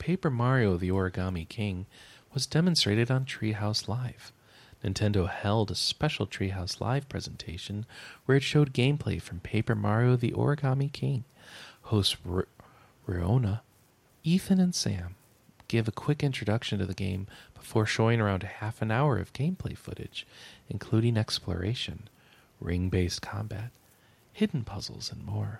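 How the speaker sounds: relaxed, calm, laid-back radio announcer voice. Reading a game news item aloud, in a relaxed radio voice. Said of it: "I'm going to keep going with this relaxed radio voice".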